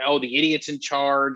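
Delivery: ordinary talk, nothing marked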